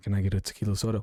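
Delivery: low, deep mumble, voice pushed down. Imitating guys ordering drinks who make their voice low and deep. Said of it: "make sure their voice is really nice and low and deep".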